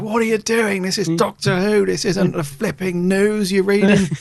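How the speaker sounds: put-on angry screaming rant. Retelling how someone on Doctor Who screamed at an actor after cut: retelling angry screaming. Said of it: "he's just screaming at him like".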